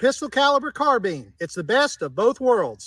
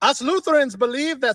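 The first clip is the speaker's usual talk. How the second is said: put-on German accent. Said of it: "why do they have an accent?".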